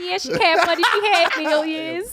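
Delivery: mocking put-on impression voice.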